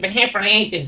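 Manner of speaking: put-on Irish barmaid voice. Retelling mocking a bartender back to her face: mimicking an Irish barmaid. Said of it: "I started doing her voice back to her".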